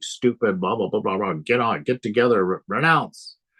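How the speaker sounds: normal talking voice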